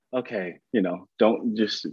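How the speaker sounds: ordinary talk, nothing marked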